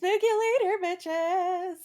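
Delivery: fervent, impassioned tone pitched very high. Trying out a line delivery with another speaker, doing it passionate. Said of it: "because I'm passionate".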